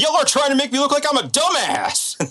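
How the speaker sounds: high-pitched angry outburst. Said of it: "getting up in the producer's face".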